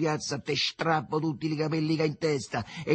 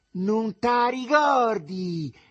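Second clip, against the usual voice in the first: very shrill, loud, piercing high-pitched yell; 7 semitones higher, 5 dB louder than usual. Reading the story aloud, voice a character hurling insults: very shrill shouting. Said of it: "gridò con voce acutissima".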